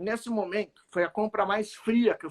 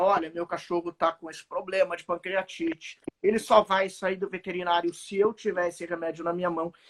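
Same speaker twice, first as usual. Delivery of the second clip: ordinary talk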